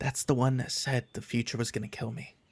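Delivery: whispered as quietly as possible. Player's character secretly tells Car something, whispering as quietly as possible. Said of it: "I'm just whispering this to Car as quietly as possible".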